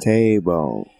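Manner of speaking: low talking-toy robot voice. Repeating how another person said a word, Speak & Spell robot voice. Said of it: "Sound like a speaking spell".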